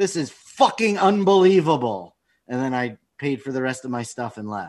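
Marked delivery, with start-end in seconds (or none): 0.0-2.1 put-on, slow, pitched-up angry outburst. Retelling stomping off from a deli counter: imitating own angry outburst. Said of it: "I stomped off as I'm going".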